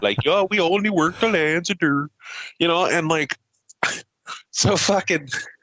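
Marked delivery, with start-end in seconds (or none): 0.3-2.1 imitated Pennsylvania accent. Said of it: "literally talking like they're fucking from Pennsylvania".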